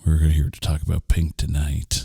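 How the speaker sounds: deepened put-on voice. Podcast host opening the episode in a put-on voice: creepy deep voice. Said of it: "No, that's not creepy at all".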